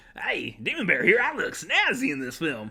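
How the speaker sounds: crazy voice, loud, big, and swooping in pitch. Show host breaks into a persona while praising the film, crazy Demon Bear voice. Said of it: "I just went into a crazy voice for that".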